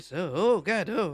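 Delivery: put-on old man voice, pitched high. A performer showing his own take on a character's voice: old man Nereid voice. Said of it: "this is sort of my old man Nereid voice".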